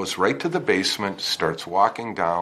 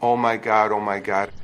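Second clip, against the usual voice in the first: ordinary talk, nothing marked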